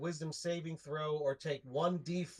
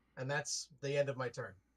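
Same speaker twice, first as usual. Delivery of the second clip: plain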